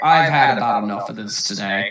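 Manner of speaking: tired, weary, fed-up sighing tone. Speaking in character during a combat turn: weary sigh. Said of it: "with a weary sigh".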